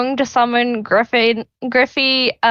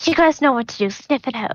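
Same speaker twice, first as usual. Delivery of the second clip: hushed stage whisper. Voicing a character giving secret orders to her animals: half-whispering to the animals. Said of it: "she'll kinda whisper in Griffey".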